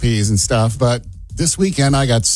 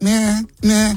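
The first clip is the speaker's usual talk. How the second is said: high-pitched kitten-like meowing voice. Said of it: "if I go".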